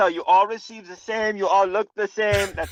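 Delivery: put-on very poor German accent. Mid-discussion about wages, the speaker slips into a bad German accent. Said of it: "because it was German".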